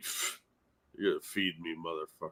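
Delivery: very hushed, quiet, put-on grumpy, annoyed cat voice. Retelling how a sleepy cat glared from the spare room: voicing a glaring cat. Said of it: "she glared out at me like".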